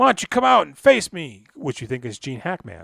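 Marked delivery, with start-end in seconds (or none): 0.0-1.4 unhinged, loud, high-pitched yelling fit. Recounting a movie scene where a man yells at a guy behind a mirror: retelling a yell. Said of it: "he's yelling at a guy behind a mirror".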